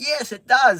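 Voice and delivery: loud, high-pitched yell. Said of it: "I yelled out".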